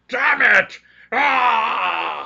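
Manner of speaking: very high, very loud, rough, echoing yell. Heard through the trees, someone yells in Dwarvish, a very loud echoing yell. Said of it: "hear echoing in Dwarvish very loudly".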